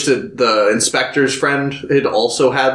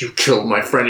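mock super angry voice; 2 semitones lower than usual. Retelling a movie scene where a character shows up: imitating someone super angry. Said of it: "super angry".

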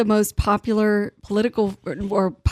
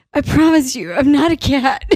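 play-acted, dead-serious, sincere, earnest, high and loud; 5 semitones higher, 5 dB louder than usual. Recalling a man stuck as a cat on a Zoom council meeting, mock-earnest voice. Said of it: "He's got this very earnest voice".

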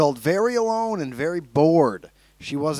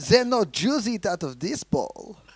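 put-on high, camp German accent; 5 semitones higher, 4 dB quieter than usual.

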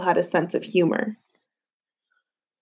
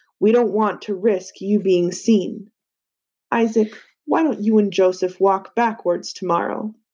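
ordinary delivery

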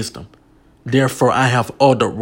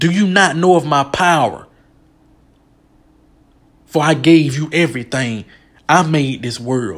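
impassioned, held-in, acted-out delivery; 4 semitones higher than usual. Quoting God speaking to Job: screaming as God. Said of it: "I was just screaming when I was quoting what God said".

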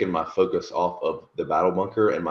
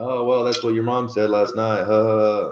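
snarky sarcastic tone, pitched up, loud; 5 semitones higher, 5 dB louder than usual. Speaker shows how they now answer hostile comments, with a sarcastic comeback. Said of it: "And I just build it into sarcasm".

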